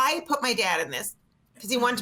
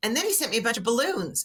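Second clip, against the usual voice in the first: ordinary talk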